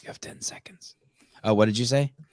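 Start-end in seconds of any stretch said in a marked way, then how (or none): 0.0-0.9 very soft, breathy whisper. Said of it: "but I whisper into her ear".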